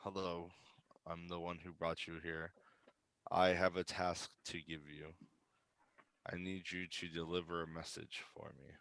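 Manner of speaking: hushed, soft half-whisper. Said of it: "I will whisper it to you".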